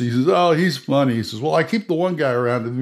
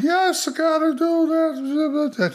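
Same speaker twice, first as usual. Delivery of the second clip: put-on very high-pitched, slow, drawn-out drunken talk. Showing the other lizard-man brother, who is always drunk: put-on drunk voice. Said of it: "is always drunk for some reason. And he's always like".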